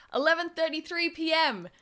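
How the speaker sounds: very high yell, sounding distant. Reading Persephone calling to the detective from the other room, yelled. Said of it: "yelled Persephone from the other room".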